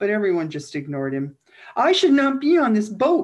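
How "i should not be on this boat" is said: very high, very loud panicked yell. Narrator reads an ignored passenger boarding a boat, yelling in panic. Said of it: "he yelled again in panic".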